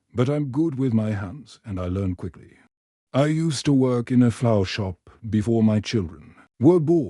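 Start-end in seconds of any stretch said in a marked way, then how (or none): none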